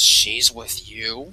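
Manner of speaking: low, growling dragon voice. Speaker voicing a character who looks over and asks a question: growling. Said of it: "he kind of growls".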